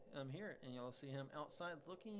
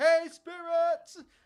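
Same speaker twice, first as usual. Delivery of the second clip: full-volume yell, very high-pitched; 26 dB louder than usual. Narrating a scene, voicing a distant man heard through a door, yelling. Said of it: "he's definitely probably like actually like yelling like".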